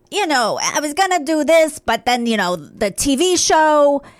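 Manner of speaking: put-on heavy, thick, laid-on New York accent. Retelling what a woman said to the speaker and Jimmy, in a thick New York accent. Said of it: "she has that thick ac- New York accent".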